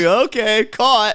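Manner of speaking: casual, unbothered, offhand delivery. Recapping a scene where Becca is told to leave, imitating Becca, mock-nonchalant. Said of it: "nonchalantly walk out".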